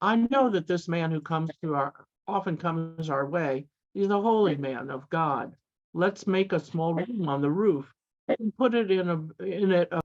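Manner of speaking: plain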